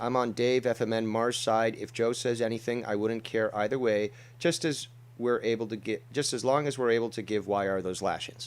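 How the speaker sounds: ordinary delivery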